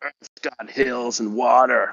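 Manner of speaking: mock screaming, yelling in a put-on American accent. Imitating a man who screamed at everyone: imitating a screaming American. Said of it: "Was that your American accent?".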